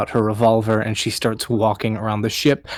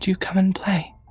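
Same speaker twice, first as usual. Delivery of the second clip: put-on whispered, very high little girl voice; 9 semitones higher, 4 dB quieter than usual. Narrator voicing the thing whispering in Captain Copernicus's ear: whispering little girl voice. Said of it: "He hears the voice of a little girl".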